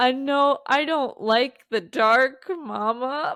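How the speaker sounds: mock sad small-child voice. A mother retelling what her daughter still says about the dark: imitating a sad child. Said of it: "she was just like sad".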